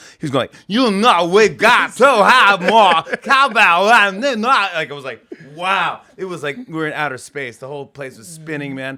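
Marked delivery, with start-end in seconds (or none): 0.7-4.7 very loud, slow, drawn-out booming delivery. Retelling how an actor talked in a sketch: Christopher Walken impression. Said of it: "an impression of himself".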